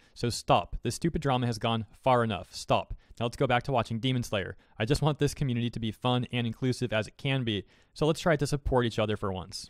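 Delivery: ordinary talk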